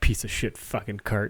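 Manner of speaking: annoyed, muttered grumbling under the breath. Imagining a film score for a friend's story, imitating someone grumbling under their breath. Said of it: "like someone grumbling under their breath".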